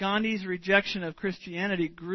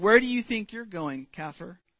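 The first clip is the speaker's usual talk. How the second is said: mock belligerent tone, faster. Telling how a church elder barred a man at the church door, retelling a belligerent challenge. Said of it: "in a belligerent tone of voice".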